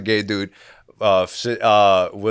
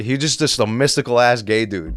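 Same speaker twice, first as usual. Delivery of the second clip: normal talking voice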